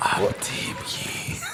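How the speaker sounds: slow, hushed, secretive whisper.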